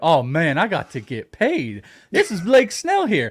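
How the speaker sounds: animated, loud, swooping, sing-song ballplayer voice. Doing an impression of a pitcher after mentioning drafting him: Blake Snell impression. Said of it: "I also do my impersonation of him".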